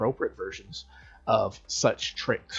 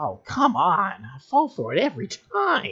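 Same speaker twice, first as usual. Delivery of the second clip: bad put-on voice, very high, swooping, slow and swinging; 10 semitones higher, 7 dB louder than usual. Retelling a cartoon prank-call gag where the bartender gets fooled, in a terrible Moe impression. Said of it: "That's a terrible Moe impression".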